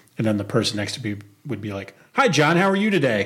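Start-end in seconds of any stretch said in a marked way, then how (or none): 2.1-3.3 put-on booming, really loud, pitched-up voice. Retelling how the person next to them answered a mock call, imitating a really loud answer. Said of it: "Really loud".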